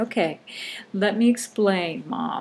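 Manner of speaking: very slow, careful, spelled-out delivery. Imagining an author explaining to his 90-year-old mother, imitating very slow speech. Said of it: "speaking very slowly to like his 90-year-old mother".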